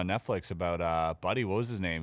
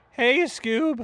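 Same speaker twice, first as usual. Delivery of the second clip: very high, loud cartoon sidekick voice; 7 dB louder than usual. Naming a fictional character to compare oneself to: Shaggy voice. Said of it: "maybe Shaggy from Scooby".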